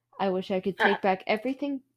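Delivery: ordinary delivery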